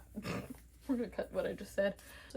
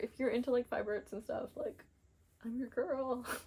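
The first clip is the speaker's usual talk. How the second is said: breaking, cracking voice mid-phrase; 3 semitones higher than usual. Wrapping up her video to viewers, voice cracking. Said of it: "My voice crack".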